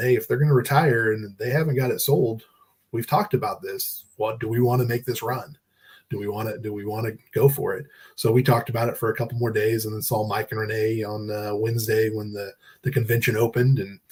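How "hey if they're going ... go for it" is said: normal talking voice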